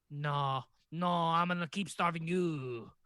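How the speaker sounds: put-on stock French voice. Joking about French history, the speaker answers in a stereotypical French voice. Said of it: "There's my stereotypical French voice".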